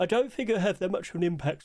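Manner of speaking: words stretched out by talking through a yawn. Discussing which skins are accepted, talking through a yawn. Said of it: "Sorry, I'm yawning".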